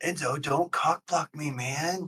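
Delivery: whispering. Speaker acts out pulling Enzo aside to ask him something, whispering. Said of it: "I'm gonna just whisper in your ear".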